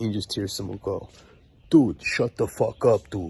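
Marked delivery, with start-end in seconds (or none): 1.7-3.3 loud, booming voice. Retelling what someone said while the speaker was screaming for help, booming voice. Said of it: "some booming voice".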